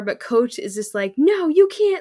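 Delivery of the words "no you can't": very high, shrill, loud shouted voice. Acting out what Coach said in the story, retelling Coach's yell. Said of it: "he's just yelling".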